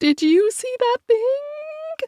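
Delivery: very high, small, frightened voice with rising pitch. A childhood friend asks the narrator after a strange noise, super high-pitched voice. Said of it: "She uses her super high-pitched voice".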